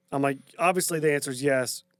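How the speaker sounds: plain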